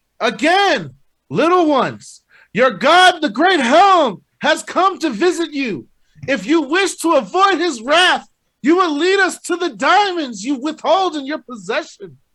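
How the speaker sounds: very high, shrill, full-throated god-like yell. Calling out across the cavern to be heard by the goblins, yelling loudly. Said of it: "I want to yell loud as I can".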